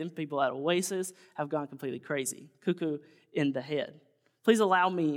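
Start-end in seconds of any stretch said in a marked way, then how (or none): none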